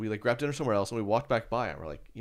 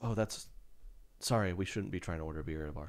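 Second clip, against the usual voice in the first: put-on mutter, much quieter, lower; 3 semitones lower, 5 dB quieter than usual. Speaker retells their own remark while ordering at a bar, retelling a remark under breath. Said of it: "that under my breath a little bit".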